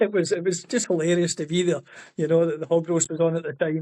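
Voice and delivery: plain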